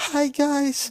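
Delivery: put-on whisper. Retelling how the other speaker greeted chat: imitating someone whispering. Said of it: "you were whispering. You were like".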